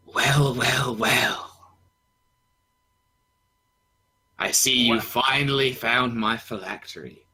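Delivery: very hoarse, raspy, high villain voice. A storyteller voices a huge composite elemental descending on the players, very raspy voice. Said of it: "you kind of hear like a very raspy".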